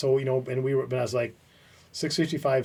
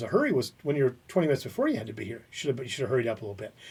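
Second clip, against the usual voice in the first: ordinary talk, nothing marked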